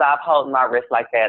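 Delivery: ordinary talk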